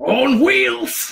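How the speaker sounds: high, loud, dopey character voice. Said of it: "played him perfectly in this really stupid manner".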